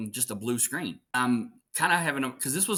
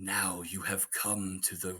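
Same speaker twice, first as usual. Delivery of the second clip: slow, drawn-out voice with each word stretched; 5 semitones lower, 8 dB quieter than usual. Retelling voicing a game line for stream viewers: Scarecrow voice. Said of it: "it was Scarecrow talking to Commissioner Gordon".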